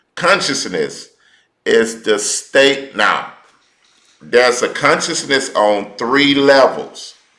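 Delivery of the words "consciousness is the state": slow, measured, deliberate word-by-word delivery. Teaching listeners, saying a definition slowly so they can get it. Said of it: "I'm going to say it slow".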